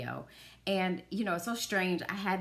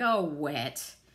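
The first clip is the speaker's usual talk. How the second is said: very slow, dry, withering, condescending drawl; 3 semitones lower than usual. Imagining a character's line to Wet and Wild, Cicely's mock-condescending dry wit. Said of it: "this really condescending, like, ugh, dry wit, like".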